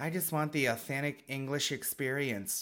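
put-on American accent. Imagining an American tourist asking for an authentic English experience: imitating an American accent. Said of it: "say if you were American".

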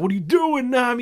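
mock, very high screaming. Recapping a scene, one character screams at a companion who takes long: retelling screaming. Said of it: "screaming at her".

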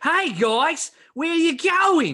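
exaggerated, over-the-top Australian accent, pitched very high. Mimicking how a woman always talks: exaggerated Australian accent. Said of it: "She's talking like this".

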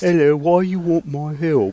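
high, poor little orphan voice. In a role-play scene, a character with drow angst asks about helping, as an Oliver Twist orphan. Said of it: "turns you into an orphan from Oliver Twist".

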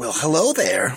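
put-on villain voice. Speaking to Joe Biden in character: Joker voice. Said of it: "This is the Joker speaking here".

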